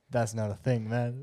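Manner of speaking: imitated whisper. Acting out an adviser's reply in someone's ear: imitating a whisper. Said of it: "TikTok Jack just whispers to him and goes".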